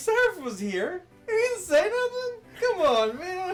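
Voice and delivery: exaggerated, very loud, very high, swooping voice. Describing how sad Hoops has been, the speaker does a Hoops impression. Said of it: "sounds just like you".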